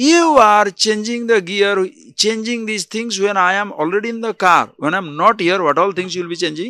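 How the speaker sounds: put-on furious, high voice. Speaker retells a car owner scolding the man changing gears, imitating an angry car owner. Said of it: "the owner gets very angry".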